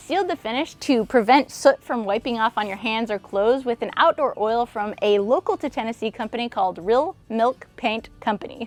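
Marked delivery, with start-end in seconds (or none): 6.8-8.7 slow, careful, deliberate word-by-word delivery. Naming a company impossible to say fast, slowly spoken company name. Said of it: "I say that slow because it's impossible to say fast".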